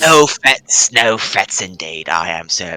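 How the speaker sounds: low-pitched, put-on English accent. Playing a character in a scene, slipping into a put-on English accent. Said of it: "I'm going English".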